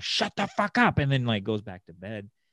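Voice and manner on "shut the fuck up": very high-pitched, shrill, furious yell. Retelling how mom yelled after her dogs started barking at night; retelling mom's angry yell. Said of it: "my mom just like yells at him".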